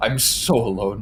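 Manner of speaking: put-on quavering voice. Act out the ending about being left alone as a child, which you find funny, imitating a quaver in the voice. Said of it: "With like the quaver in the voice".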